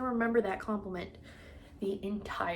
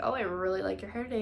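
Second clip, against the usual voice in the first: ordinary talk, nothing marked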